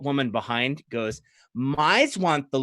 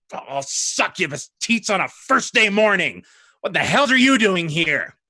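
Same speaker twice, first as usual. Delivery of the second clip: hostile, high-pitched angry snarl; 6 semitones higher, 4 dB louder than usual. Game narrator voices Anduriel glaring down at a player: Anduriel snarling. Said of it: "he glares and he shakes his head and he snarls".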